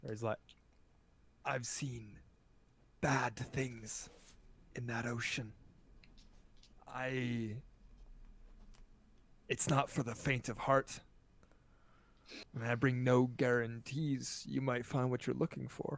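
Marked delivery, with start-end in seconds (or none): 1.4-16.0 stage whisper, quieter. Voicing a man who leans across the table to warn the group, in a stage whisper. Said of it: "whispers to you in a, in a stage whisper".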